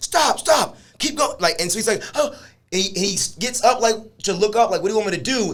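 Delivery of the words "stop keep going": put-on very high, barking voice. Describing body cam footage, he acts out the police officer: retelling barked commands. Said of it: "he's barking commands at him".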